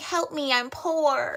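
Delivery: woozy, loopy, high, drawn-out sarcastic tone. Retelling a movie scene where a drugged character begs in first class: imitating a loopy movie character. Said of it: "she's kinda loopy".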